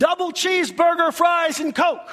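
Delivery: high, loud yell. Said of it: "he's yelling at the speaker".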